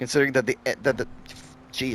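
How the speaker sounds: stumbling over words, annoyed. Speaker complaining about a pay-to-win upgrade, stuttering and annoyed. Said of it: "sorry if I stutter a bit".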